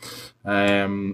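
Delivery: plain reading voice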